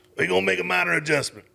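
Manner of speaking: high, rough, creaky put-on voice. Retelling a press conference question and answer in Coach O's voice. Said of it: "I'm gonna do the voice 'cause I love the voice".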